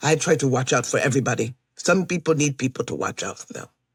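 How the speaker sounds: put-on English spoken with an Eastern European accent. Retelling what a man at the rental car pickup said; Eastern European accent. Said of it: "Eastern European accent".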